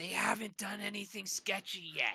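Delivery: high, very quiet, hushed stage whisper. Leaning out of a dome to tell the party something: loud whisper. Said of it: "loudly whisper to them".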